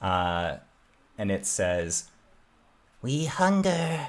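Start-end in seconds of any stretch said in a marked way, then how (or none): 3.0-4.1 very slow, tiny voices speaking in unison. Voicing what the players hear in their heads from the little creatures: tiny voices speaking as one. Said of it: "tiny little voices that speak as a large unit".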